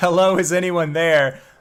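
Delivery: high calling-out yell. Speaker recaps how the listener started off, retelling a yell. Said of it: "you started off by yelling".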